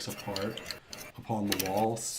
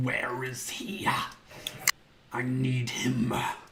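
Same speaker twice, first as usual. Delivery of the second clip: shrieking, shrill cry; 3 semitones higher, 3 dB louder than usual. In a game, a character searches for someone, shrieking.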